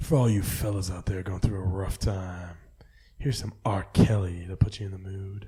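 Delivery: raspy, fast late-night radio DJ patter. Riffing on how late-night radio DJs talk, late-night radio DJ voice. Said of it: "late night radio D J".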